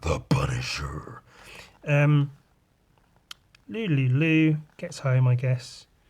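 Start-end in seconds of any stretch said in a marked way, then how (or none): 0.0-1.2 weak, soft, very deep dramatic voice. Announcing the title again after apologizing for their voice, trying a deep dramatic voice. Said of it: "I can't even do my deep voice".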